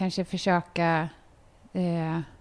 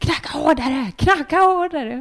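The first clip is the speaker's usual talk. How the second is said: frantic, high, loud yelling; 8 semitones higher, 7 dB louder than usual. Retelling urging someone at Arlanda to knock harder: imitating own yelling. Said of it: "och skriker där på Arlanda".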